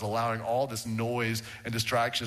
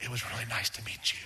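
put-on close whisper, quieter; 5 dB quieter than usual. Showing how an odd greeting to a new acquaintance would sound: pretend whisper up close. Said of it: "pull them real close and go".

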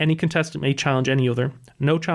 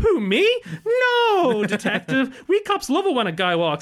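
very high, swooping, sing-song put-on voice; 11 semitones higher than usual. Retelling a detective's reply to a lawyer outside court, in a put-on fake voice. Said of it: "puts on this fake voice".

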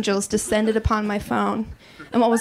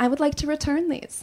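put-on courteous female voice; 4 semitones higher, 4 dB quieter than usual.

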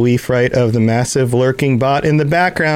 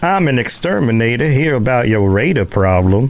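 put-on southern-accented drawl. A player speaks in character to a game character; southern drawl. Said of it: "use the southern drawl kind of thing".

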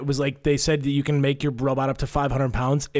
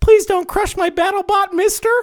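put-on very high, loud, pleading little-girl voice; 7 dB louder than usual. Retelling a battle bot match, imitating a six-year-old girl pleading. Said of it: "you hear her on the hot mic going".

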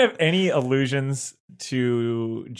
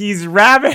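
very loud, high shrieked scream; 8 semitones higher, 9 dB louder than usual. Describing an imagined scene at a lake: imitating someone screaming. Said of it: "someone there nearby that screams".

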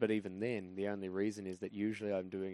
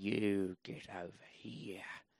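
mock angry speech through clenched teeth. Showing how her mother sounds when angry: mock-angry, through clenched teeth. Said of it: "she talks just through her teeth".

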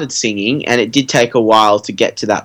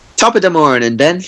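put-on Irish brogue accent; 4 semitones higher than usual. A guest answers the host's welcome back, in a fake Irish accent. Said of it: "You're Irish".

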